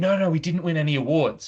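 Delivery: bright, delighted, really happy, cheerful tone. Recounting a sponsor's answer to a question, retelling a really happy reply. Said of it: "they said it like that in a really happy tone".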